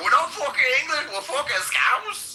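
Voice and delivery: play-acted, very high, shrill, in-your-face screaming. Retelling what people in a bar kept screaming in their face: imitating Scousers screaming. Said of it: "they kept screaming that in my face".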